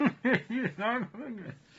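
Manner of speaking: laughing very hard while speaking. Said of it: "I'm laughing too hard".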